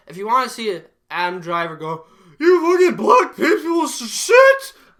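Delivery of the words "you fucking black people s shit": put-on angry yell, higher and louder. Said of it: "Just yell racist".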